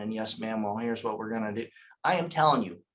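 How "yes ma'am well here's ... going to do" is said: dull, flat, low, energy-less monotone drone. Contrasting high energy with the monotone way of talking: flat monotone delivery. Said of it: "just going like this and being monotone".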